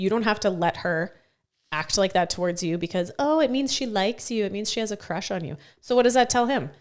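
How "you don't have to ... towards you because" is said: ordinary talk, nothing marked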